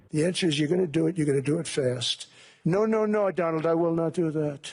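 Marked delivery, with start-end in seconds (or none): 2.6-4.7 put-on French accent. Retelling a talk with Emmanuel, speaker voices his refusal, imitating Emmanuel, French accent. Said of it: "was that an accent?".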